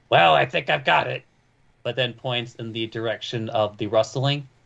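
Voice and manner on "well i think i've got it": gruff, rough, creaky put-on man's voice. Voicing a character who points one way, in the man's voice. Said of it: "and in the man's voice".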